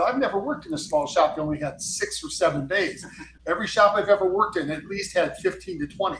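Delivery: ordinary talk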